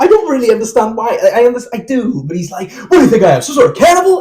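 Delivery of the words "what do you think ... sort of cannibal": wild, high outburst with voice swooping all over. Retelling how Howard freaks out when the food arrives: imitating Howard freaking out. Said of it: "Howard just absolutely freaks it".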